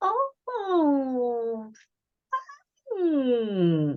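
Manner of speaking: underwhelmed, let-down, swooping, drawn-out oh. Describing someone opening a present you gave them: imitating an unimpressed 'hmm'. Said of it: "With that tone of voice".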